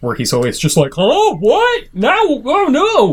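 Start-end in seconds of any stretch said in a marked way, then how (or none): 1.0-3.1 goofy sing-song, very high, very slow, drawn out. Describing the doofy game character Ethan's reactions, Gomer Pyle voice. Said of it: "He's got like a Gomer Pyle voice".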